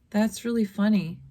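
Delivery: put-on unlaughing delivery. Describing someone who calls something funny without laughing, imitating them mock-deadpan. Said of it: "and they don't laugh".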